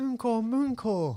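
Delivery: attempted Welsh accent with Cockney. Saying a Welsh phrase for a quiz: attempted Welsh pronunciation with Cockney. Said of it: "I've probably got the accent completely wrong with a bit of Cockney thrown in".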